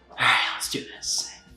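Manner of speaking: attempted creepy clown voice. Opening a show episode with an Art the Clown impression. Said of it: "my embarrassing attempt at doing an Art the Clown impression".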